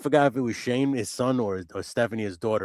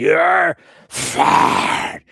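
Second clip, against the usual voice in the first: put-on fiery roar, much higher and louder; 4 semitones higher, 9 dB louder than usual. Telling a non-wrestling fan how Vince fired people: Vince fire-breathing 'you're fired'. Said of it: "he was trying to breathe the fire".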